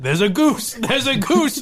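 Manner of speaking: delighted, gleeful yell. Retelling how Steve reacted to a goose in the road: imitating Steve yelling with glee.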